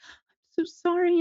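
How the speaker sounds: acted, meek, tearful sob, very high. Retelling a girl's apology in court, imitating someone crying. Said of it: "and she's crying".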